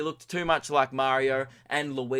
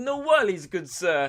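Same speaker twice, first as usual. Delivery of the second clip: put-on Italian accent, higher; 4 semitones higher, 4 dB louder than usual. Imagining what the food truck vendor would say: italian accent. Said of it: "he'd probably be Italian, so he'd be like".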